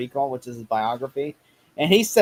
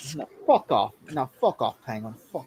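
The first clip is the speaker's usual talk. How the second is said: put-on British accent; 4 dB quieter than usual. Riffing with friends on Bruce Wayne being British, telling off Penguin in a put-on British accent.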